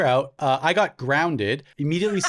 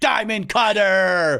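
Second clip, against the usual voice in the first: put-on sudden cry, much higher; 5 semitones higher, 4 dB louder than usual. Recalling someone grabbing a person's head mid-run through the living room: acting out a sudden callout. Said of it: "grabs you by your head ... and goes".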